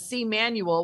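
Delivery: ordinary delivery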